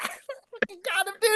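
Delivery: speech broken by laughter. Retelling the moment after a fight: retelling laughing speech. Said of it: "We're just laughing".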